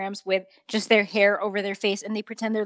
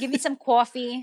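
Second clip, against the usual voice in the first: New York accent, higher; 3 semitones higher than usual. Showing how people in New York talk: New York accent. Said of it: "but I hear talk a lot, like".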